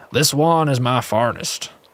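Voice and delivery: boastful, proud, put-on pirate voice. Narrator voicing the blacksmith character in a story, in pirate voice. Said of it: "we're going to go with the pirate voice".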